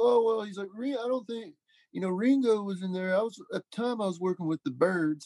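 high old-timer impression.

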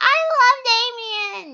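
very high, very loud puppet squeak, "love" stretched long. Playing through a game demo, he voices the character Billy in an Elmo voice. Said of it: "I gave Billy an Elmo voice".

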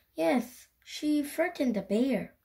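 ordinary delivery

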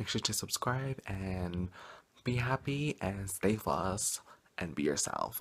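soft, quiet, worn-out voice. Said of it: "I'm tired, I'm sorry, I'm quiet".

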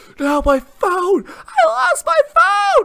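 shrill, very high, very loud, drawn-out scream. Retelling how a soaked dude lost his phone to a wave, retelling a scream. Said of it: "he starts screaming like that".

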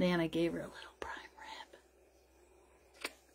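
soft, slow, hushed whisper. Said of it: "We have to whisper".

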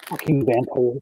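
low mutter under breath. Retelling walking away from a man after warning him off, retelling an under-breath mutter. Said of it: "just under my breath".

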